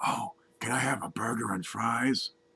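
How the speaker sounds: very quiet, soft, hushed half-whisper. In a joke, the blonde repeats her order to the librarian, half-whispering. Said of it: "So the blonde whispers".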